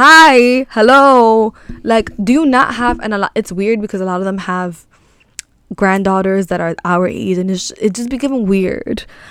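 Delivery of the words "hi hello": very loud, pitched-up street catcall. Retelling how men on the corner call out, imitating men catcalling. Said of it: "trying to catcall me".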